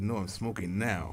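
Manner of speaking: usual speaking voice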